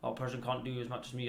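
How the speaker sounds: ordinary talk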